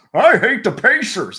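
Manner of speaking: awful, botched character voice, very high-pitched, shrill and loud. Doing mock commentary over a Knicks-Pacers game: bad Reggie Miller voice. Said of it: "Or Reggie Miller just".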